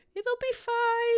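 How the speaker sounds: very high-pitched voice, stretched out. Quoting her saying it'll be fine, in a high-pitched voice. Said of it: "she says in a high-pitched voice".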